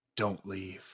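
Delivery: hushed, very soft half-whisper, barely there. Describing an imagined scene of someone in a toilet stall: half-whispering. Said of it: "somebody whispering".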